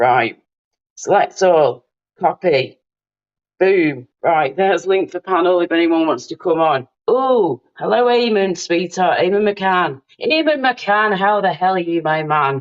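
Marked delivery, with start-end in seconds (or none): 10.2-12.6 terrible put-on Irish accent. Greeting a guest joining the panel, the speaker uses a terrible irish accent. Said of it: "That was a terrible Irish accent".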